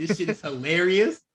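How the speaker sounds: ordinary talk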